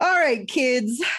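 eerie ghoulish announcer voice. Closing a podcast episode, the host signs off to listeners in a Crypt Keeper voice. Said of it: "Crypt Keeper".

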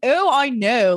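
breezy, high nineties comedy-movie character voice with lilt. Imitating the character Audrey, very Romy and Michelle. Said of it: "very Romy and Michelle".

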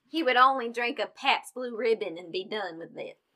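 put-on Southern drawl accent. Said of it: "Do you like my Southern accent?".

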